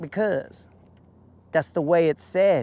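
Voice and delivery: ordinary talk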